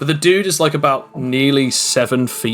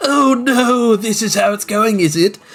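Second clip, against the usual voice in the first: very high, slow, smug yet furious voice; 9 semitones higher than usual. Voicing a transformed foe facing the players: smug but furious. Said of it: "a trying not to be angry whilst trying to still keep the smile look".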